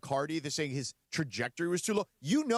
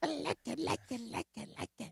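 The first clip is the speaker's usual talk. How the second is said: gremlin-like voice, higher and quieter; 7 semitones higher, 7 dB quieter than usual. Repeating a line when asked to do it again, sounding like a gremlin. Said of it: "He kinda sounded like a gremlin".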